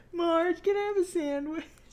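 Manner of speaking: very high-pitched, whiny voice. Discussing an episode, quoting Homer whining to Marge, imitating Homer's whiny voice. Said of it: "And he does the whiny voice".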